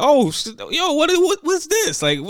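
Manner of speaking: acted shouting. Recounting yelling with Jazz when aliens appeared in a game, retelling a yell. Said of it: "So me and Jazz yelling like".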